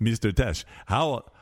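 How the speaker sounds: bad, terrible put-on fake Swedish accent. Retelling a man from Sweden who approached him in Europe, terrible Swedish accent. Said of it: "A terrible Swedish accent".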